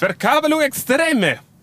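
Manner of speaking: put-on loud Italian accent.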